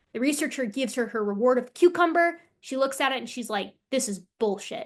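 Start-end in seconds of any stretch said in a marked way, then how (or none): 3.9-4.8 put-on angry capuchin monkey voice. Narrating a fairness experiment video, voicing the capuchin: imitating an angry capuchin. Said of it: "they're mad about it".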